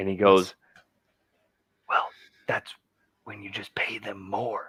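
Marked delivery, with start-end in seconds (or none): 1.9-4.7 put-on creepy whisper, much quieter. Act out the President answering complaints at a press briefing, in a creepy Biden whisper. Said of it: "he did this creepy whisper thingy".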